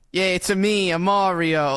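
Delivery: half-hearted, zero-effort, slow, drawn-out cartoon voice. Showing how lazy the new Mario voice sounds: lazily sounding like Mario. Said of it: "someone lazily sounding like Mario".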